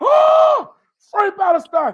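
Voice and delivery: high, loud, slow, desperate cry. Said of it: "He's like".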